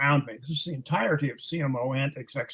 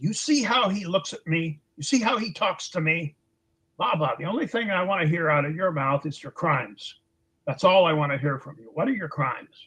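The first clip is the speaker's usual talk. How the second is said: raging, furious, explosive shouting tirade; 4 semitones higher than usual. Retelling how a man exploded at him when he tried to speak; retelling a furious outburst. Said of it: "and then he just exploded".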